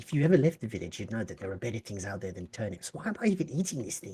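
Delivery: grumbling mutter under the breath. A character eats in the silent room, muttering to himself. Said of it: "Pod is muttering to himself".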